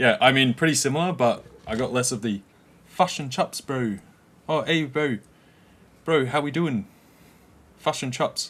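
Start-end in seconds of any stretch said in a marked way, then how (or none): 2.9-8.5 put-on New Zealand accent, Kiwi-style. Showing how a phrase sounds in an accent, put-on New Zealand accent. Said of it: "sounds like New Zealand".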